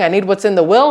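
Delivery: ordinary talk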